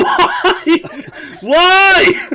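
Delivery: shrill, very high, loud yell, stretched-out why. Asking another speaker why they are crying: yelling. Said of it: "Don't yell at me".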